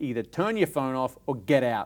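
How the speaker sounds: ordinary talk, nothing marked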